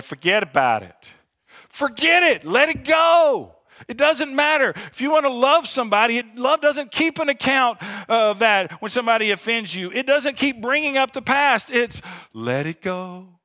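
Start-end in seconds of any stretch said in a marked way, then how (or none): 0.0-2.4 a little Italian accent, light and sing-song. Speaker addressing an audience mid-talk; slight italian accent. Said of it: "a little Italian accent there".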